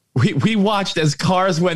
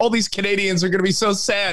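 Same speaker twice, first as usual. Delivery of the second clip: ordinary talk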